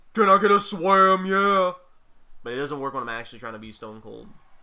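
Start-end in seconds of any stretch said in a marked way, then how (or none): 0.2-1.7 nasal put-on parody voice, much louder, slower. Showing the parody that works with your voice too nasally for the real one: nasal Stone Cold parody. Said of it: "I cannot do a Stone Cold voice... like Swamwiser parody".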